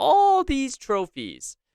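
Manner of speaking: voice cracking up very high. Listing the irish club's titles and trophies, voice cracking. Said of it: "I don't know why the voice cracked there".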